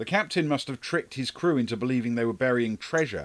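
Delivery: ordinary delivery, nothing marked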